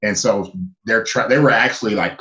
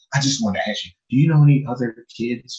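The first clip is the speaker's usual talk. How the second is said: put-on whispering voice; 3 semitones higher than usual. Retelling what the school secretary asked: imitating someone whispering. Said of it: "she's whispering".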